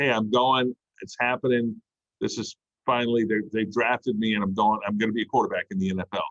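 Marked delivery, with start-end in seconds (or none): none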